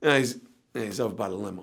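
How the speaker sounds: very low, worn-out, exhausted, hesitant, halting mumble. Speaker retells answering a woman who pulled up asking for someone: retelling an exhausted reply. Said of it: "I'm exhausted at this point".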